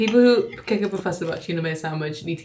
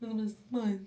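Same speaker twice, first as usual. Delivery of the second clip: put-on lisping boxer voice, higher and quieter; 4 semitones higher, 12 dB quieter than usual. Showing another speaker how Chris Eubank talks: Chris Eubank voice. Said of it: "Talks like this".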